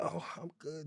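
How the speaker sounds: mock quivering, very soft, quiet little voice. Retelling meeting someone she loved, imitating a trembling voice. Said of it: "Just trembling, just quivering".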